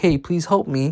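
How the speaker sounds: put-on pleading. Retelling a scene where a woman threatened by a Mononoke pleads, imitating a woman pleading. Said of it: "she's pleading like".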